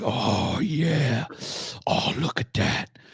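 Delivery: slow whisper. Speaker retells what he heard a man say: retelling a whisper. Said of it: "I heard him whispering, like".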